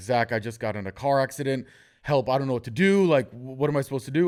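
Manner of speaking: teary, tearful, stressed-out voice. Retelling a call from a girl after her car accident: imitating someone crying, stressed. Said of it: "in tears. She's, like, super stressed".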